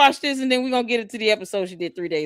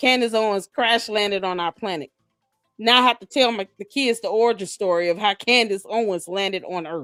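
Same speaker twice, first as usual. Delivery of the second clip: ordinary talk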